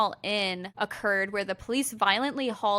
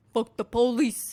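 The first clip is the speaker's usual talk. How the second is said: put-on Brooklyn accent; 3 semitones higher, 4 dB louder than usual. Imitating a rioter shouting at police: put-on Brooklyn accent. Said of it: "is that how a Brooklyn accent sounds?".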